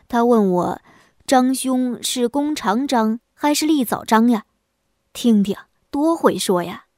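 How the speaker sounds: plain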